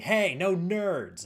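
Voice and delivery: loud, high, put-on angry shout. Retelling an angry fan yelling from a train door: imitating someone yelling. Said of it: "one of them just yells at me".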